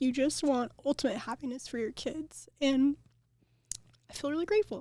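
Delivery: tearful, crying through words. Speaking of their parents, crying while speaking. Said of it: "Sorry, I'm crying".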